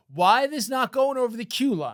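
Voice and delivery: put-on yelling. Picturing her holding the subway doors, yelling at the motorman: imitating someone yelling. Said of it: "holds the doors and yells at the motorman".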